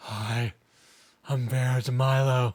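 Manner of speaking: very slow character voice, every word stretched out. Joking about dressing up as Vera DeMilo for a stream: imitating Vera DeMilo. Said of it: "I could be like".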